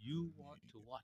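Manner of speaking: very quiet dad voice. Talking about parenting, imitating a parent questioning a child, in a dad voice. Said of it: "The look in the dad voice".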